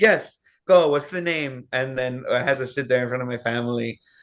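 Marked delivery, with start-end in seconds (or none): 0.0-1.7 put-on sassy little-girl voice, higher pitch. Retelling how a little girl demanded music videos in front of family, imitating her attitude. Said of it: "little tudes".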